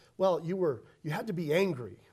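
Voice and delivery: ordinary delivery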